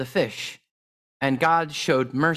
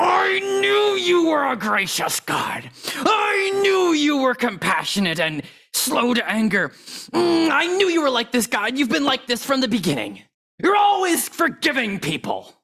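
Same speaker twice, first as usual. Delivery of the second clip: very high, acted, ground out through clenched teeth; 10 semitones higher than usual. Retelling Jonah's prayer to God, acting out Jonah through gritted teeth. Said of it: "saying this prayer through gritted teeth".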